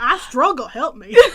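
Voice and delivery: very loud, high-pitched, put-on Southern American accent. Repeating a line from the story just told to the group, in a southern accent. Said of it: "With the southern accent included".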